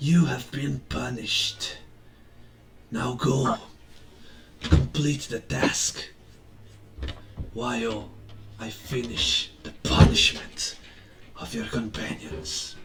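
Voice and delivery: very low, hushed, deep, drawn-out whisper. Game master voicing a character speaking to John's character, whispering. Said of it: "he whispers to you".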